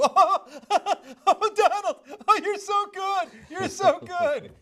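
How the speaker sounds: high, drawn-out, simpering, fawning put-on gush. Imitating the press flattering Trump: imitating fawning press. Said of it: "How fawning and deferential the press".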